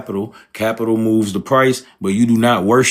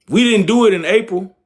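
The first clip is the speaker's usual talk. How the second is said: full-on, very high, raised yelling; 10 semitones higher than usual. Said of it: "let me stop yelling".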